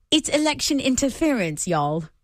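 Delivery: put-on British accent. Asked to say the quoted line again, now in a British accent. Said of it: "now do it with a British accent".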